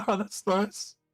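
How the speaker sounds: squeaky, very high, awkward, forced polite voice. Retelling a reply to a stranger who acts friendly: imitating awkward politeness. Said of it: "you're awkwardly g-, like, trying to be polite".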